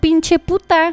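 acted-out, annoyed, high, angry yell. Retelling what someone yelled after the speaker kept walking: retelling an angry yell.

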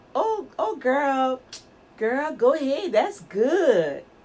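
sarcastic, fake-praising tone. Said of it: "saying sarcastic words".

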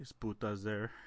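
put-on flat monotone. Acting out what a man said to her, imitating a monotone voice. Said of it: "He's just he's all like monotone".

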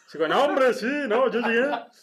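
loud, high northern Mexican norteño uncle voice. Taking on the other speaker's late uncle's voice to tell his story; impression of a norteño uncle. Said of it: "Con voz de tu tío, lo voy a hacer".

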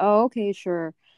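mock-condescending tone. Recounting a doctor's reply after being corrected, mimicking a condescending doctor. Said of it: "he was condescending".

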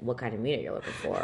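low, soft, deepened male voice. Retelling a man who suddenly spoke up behind them, imitating his deep voice. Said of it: "His voice sounded deep to me".

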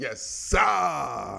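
talking from the stomach. Sports show host shows how his Japanese friends say it, imitating them. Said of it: "that's how they say it like in my Japanese friends".

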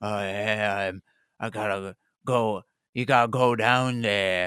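strange, very weird, low put-on man's voice. Retelling how someone pretended to be a man: very weird man voice. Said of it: "using a very weird voice saying".

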